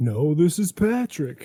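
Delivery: swooping, sing-song put-on voice with wide pitch swings. Answering a call-in greeting as a joke: Patrick Star impression. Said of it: "Is that an impersonation of s-, Patrick?".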